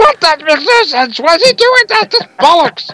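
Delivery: very high, mock screaming rant.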